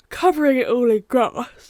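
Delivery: yawning mid-sentence, spoken through a yawn. Narrating their own building work to viewers, yawning while talking. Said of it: "Apologies for the yawning".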